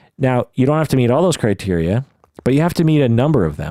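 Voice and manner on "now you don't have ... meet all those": usual speaking voice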